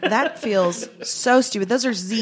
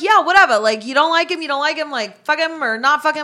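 gruff, rough-edged tough street talk, pitched up; 8 semitones higher, 4 dB louder than usual. Describing how certain people talk, doing a gruff Jersey Shore impression. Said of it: "they talk so, like, gruff".

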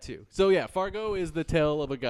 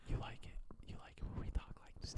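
very quiet, hushed, fake breathy asmr-style whisper. Joking about doing ASMR for listeners: mock ASMR whisper. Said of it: "I should whisper a little bit more".

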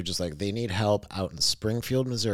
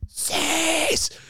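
play-acted, very high, loud, shrill shouted scream; 5 dB louder than usual. Retelling spotting a friend from the car window: retelling a scream. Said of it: "I roll down the window and I scream at him".

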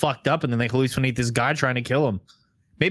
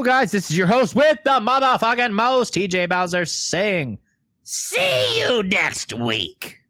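put-on ghoulish horror host voice, higher; 7 semitones higher than usual. Signing off a podcast episode: Crypt Keeper voice. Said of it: "your best Crypt Keeper yet".

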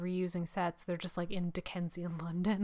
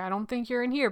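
put-on joking tone, higher pitch; 5 semitones higher, 4 dB louder than usual. Retelling what a man said while looking into a rainwater barrel, retelling a joking remark. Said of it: "And he's like jokingly".

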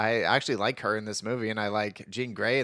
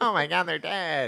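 whiny, high-pitched, pitched-up whine; 6 semitones higher than usual. Speaker chatting about Star Wars, doing a Luke Skywalker impression. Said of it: "That's my Luke Skywalker impression".

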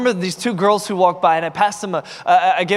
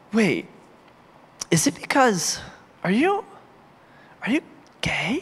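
slow, halting, unsure whisper; 4 dB quieter than usual. Retelling asking two strangers a question after church talk: retelling a whisper. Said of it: "And I whispered it".

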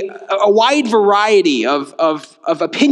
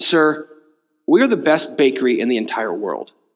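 put-on lofty, dead-serious, very low, pretentious voice; 7 semitones lower, 3 dB quieter than usual. Retelling the bakery man's answer to whether the cookies are worth it, mimicking a pretentious tone. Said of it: "in a very pretentious manner".

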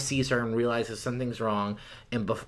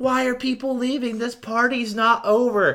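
put-on screaming girl voice, higher and louder; 12 semitones higher, 6 dB louder than usual. Retelling a movie scene about a ruined party: imitating Madison screaming. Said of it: "And she starts screaming".

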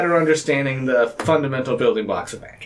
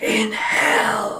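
theatrical whisper, pitched high; 6 semitones higher than usual. Player repeats a battle cry after being shushed, stage whisper. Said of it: "that was stage whisper".

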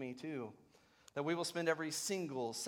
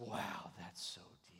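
whispered, slow, breathy, drawn-out interviewer voice; 7 semitones lower, 8 dB quieter than usual. Retelling an interviewer's reaction to an answer, imitating a hushed interviewer. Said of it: "They talk very quietly and".

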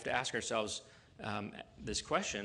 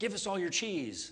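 bossy, insistent, demanding, raised and pitched up; 9 semitones higher, 5 dB louder than usual. Showing how the phrase sounds in English: demanding tone. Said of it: ""give us" sounds very demanding".

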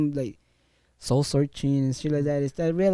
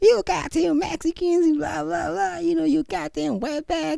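imitated woman screaming, much higher pitch; 11 semitones higher than usual. Recounting an old lady who kicked the speaker and began screaming, imitating a woman screaming. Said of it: "she used to start screaming".

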